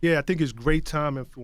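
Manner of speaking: plain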